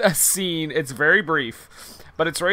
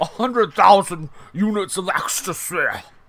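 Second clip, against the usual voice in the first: put-on jowly, villain-ish British accent; 3 semitones higher than usual. Mimicking a movie character's line: British accent impression. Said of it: "I wish he had an accent like that".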